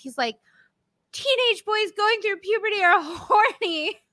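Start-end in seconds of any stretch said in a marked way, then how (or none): 1.1-3.9 all-out, high, loud, shrieking, screaming yell. Recounting a favorite line from a military bro, the speaker imitates him yelling. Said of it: "And he literally yells".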